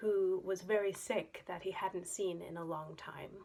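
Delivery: plain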